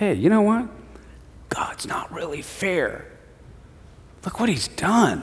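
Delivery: soft, hushed, tempting whisper. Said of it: "what the devil comes and whispers to us".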